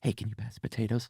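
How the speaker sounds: hushed, very quiet murmur. Showing how to ask across the table during someone's story, in a hushed tone. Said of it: "You might do it in a hushed tone".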